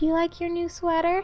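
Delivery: gentle, soft voice as to a pet.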